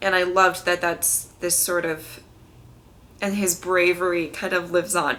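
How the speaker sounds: voice catching, choked-up, close to crying. Talking about what Rick means to them, on the verge of crying. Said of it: "I'm gonna cry".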